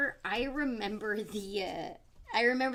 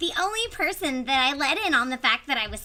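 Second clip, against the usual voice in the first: very loud, high, put-on Valley Girl voice; 5 semitones higher, 9 dB louder than usual. Reading a long highlighted passage aloud, in a Valley Girl voice. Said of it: "my Valley Girl voice".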